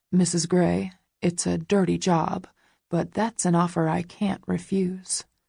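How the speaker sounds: ordinary delivery, nothing marked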